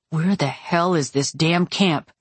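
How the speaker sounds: plain reading voice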